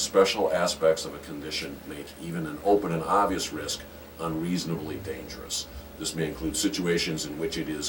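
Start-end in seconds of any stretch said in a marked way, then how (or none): none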